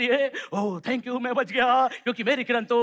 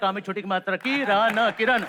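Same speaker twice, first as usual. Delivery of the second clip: ordinary talk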